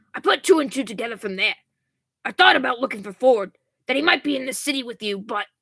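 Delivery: gruff put-on character voice. Playing a character speaking to someone about looking for Ford, in a gruff voice. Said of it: "I cannot keep this gruffness up".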